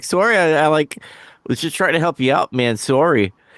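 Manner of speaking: casual, nonchalant, over-apologetic put-on Canadian manner. Retelling a wrestling apology, imitating Luger being all Canadian. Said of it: "he was being all Canadian in a way".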